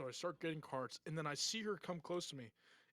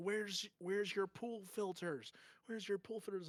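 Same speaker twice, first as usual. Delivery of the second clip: mock frantic voice, screaming; 5 semitones higher than usual. Retelling how an angry customer at work demanded pool filters: imitating someone screaming. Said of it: "she starts screaming at me".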